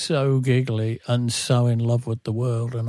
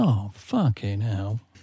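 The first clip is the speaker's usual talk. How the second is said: play-acted, really disappointed, deflated swear; 2 semitones lower than usual. Retelling how Mosley reacted after cutting his ukulele strings: imitating Mosley's disappointed curse. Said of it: "like that, and being really disappointed".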